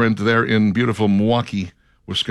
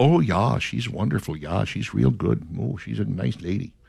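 put-on soft Milwaukee Wisconsin accent; 6 dB quieter than usual. Imitating the people who testified on a judge's behalf: Milwaukee, Wisconsin accent impression. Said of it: "That's my Wisconsin impersonation right there".

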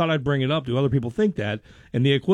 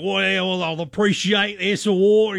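put-on higher, almost Cockney London accent; 5 semitones higher than usual. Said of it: "He's almost Cockney is how he talks".

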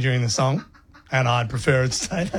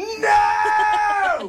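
screaming voice. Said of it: "and I scream".

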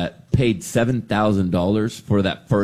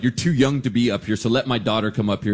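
ordinary talk, nothing marked

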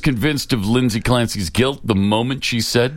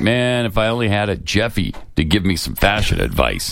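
usual speaking voice

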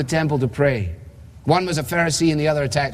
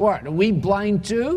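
mock derisive, scornful, smug sneering tone; 5 semitones higher than usual. Preaching, acting out critics' question directed at Jesus, imitating a smug sneer. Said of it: "Sense the smugness of their tone".

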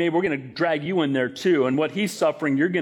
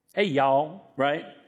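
put-on Southern accent, slower pace. Explaining how someone from the south sounds, speaker puts on a southern accent. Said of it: "like someone's from the South".

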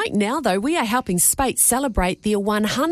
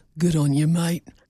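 voice taken right down, quite low; 6 semitones lower than usual. Coaching someone to breathe in and say the phrase; going quite low. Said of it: "go quite low and then go".

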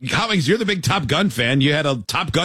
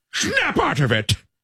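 very high, pitched-up, film-star style delivery; 12 semitones higher than usual. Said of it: "That was a good [name] impression".

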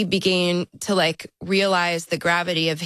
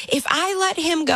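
play-acted, high-pitched screaming; 11 semitones higher than usual. Retelling a phone call with a counselor: retelling screaming. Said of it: "I'm screaming in the phone at this poor man".

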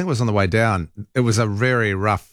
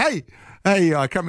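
slow, drawn-out calling out across a distance; 8 semitones higher than usual. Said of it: "just the way he said it".

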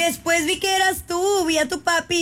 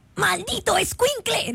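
attempted cartoon-dad voice, falling short; 4 semitones higher than usual. Asked to imitate Homer, the speaker attempts one of his lines: failed Homer impression. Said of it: "No me sale la de Homero".

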